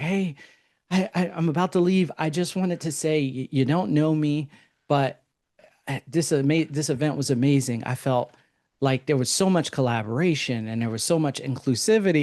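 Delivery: weepy, tearful speech through crying. Retelling what a crying woman said after an event: imitating someone crying. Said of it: "she's, like, crying".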